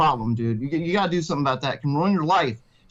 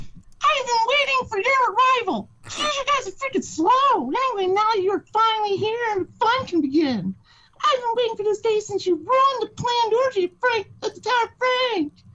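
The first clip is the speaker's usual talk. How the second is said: high-pitched squeaky voice with a mocking tone. Narrator voicing a mysterious voice greeting the heroes, Chip and Dale cartoon voice. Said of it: "the voice sounds like an old Chip and Dale cartoon".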